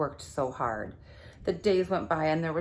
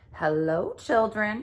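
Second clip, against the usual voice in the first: sugary, sweet-toned, honeyed delivery; 4 semitones higher than usual. Narrator reading a story as someone greets the children: sweet voice. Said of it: "said someone in a sweet voice".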